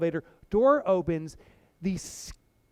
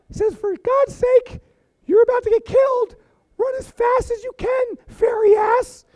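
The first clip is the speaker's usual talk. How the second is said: shrill, high, loud raised voice; 8 dB louder than usual. Telling a story, the murder side of the speaker's brain speaks, slightly higher voice. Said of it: "had a slightly higher voice".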